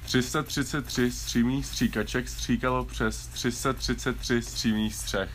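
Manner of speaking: slow, careful, deliberate word-by-word delivery. Given one more try at a tongue twister, saying it slowly. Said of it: "I'm gonna say it slow".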